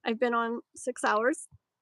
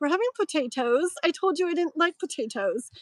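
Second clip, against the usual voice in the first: put-on British accent, pitched up; 5 semitones higher than usual. Describing a nine-year-old boy whose words come out British: imitating a British accent. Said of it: "with a British accent".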